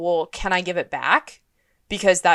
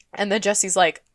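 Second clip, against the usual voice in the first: normal talking voice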